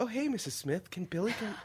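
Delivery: softened, toned-down, un-macho manly voice. Mocking a guitar tutor talking to his students' parents: mimicking his less macho voice. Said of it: "he drops all the testosterone that's dripping in his voice".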